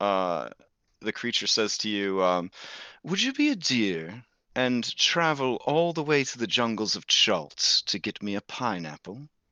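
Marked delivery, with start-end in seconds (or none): 3.0-9.3 genteel, refined, dignified, ladylike feminine put-on voice. Narrating what a creature says to you: dignified feminine creature voice. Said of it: "in a very dignified uh, and maybe feminine voice".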